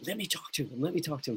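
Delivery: soft, hushed stage whisper under the breath. Retelling what the former pastor half-whispered from the front row: imitating a half-whisper. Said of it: "He was whispering to me".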